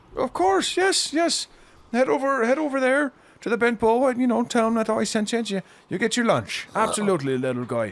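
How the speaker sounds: put-on very high, loud elderly dwarf character voice. Voicing an elderly dwarf character sending someone off for lunch, elderly dwarf voice. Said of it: "who is a elderly dwarf with graying hair".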